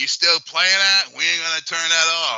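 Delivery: mock high, shrill screaming woman's voice. Retelling what a player's old lady yelled through the controller speaker: imitating a screaming woman. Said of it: "his old lady fucking screaming out".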